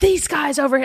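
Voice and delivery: put-on furious outburst, high, angry snapping yell. Retelling how an actress on set snapped at two crew members: imitating someone yelling. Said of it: "she snaps and she yells and says".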